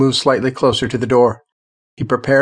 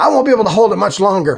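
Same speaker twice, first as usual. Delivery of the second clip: urgent, high, pitched-up shout; 8 semitones higher, 3 dB louder than usual. Jacob, holding a door shut against a zombie, calls to the others; shouted. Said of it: "Jacob shouted".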